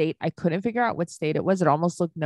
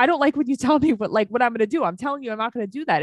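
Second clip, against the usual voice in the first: mock yelling, high-pitched, heated scolding tone; 6 semitones higher than usual. Retelling how Sean argued back, imitating Sean yelling. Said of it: "you're yelling at her like she's a forty-year-old man".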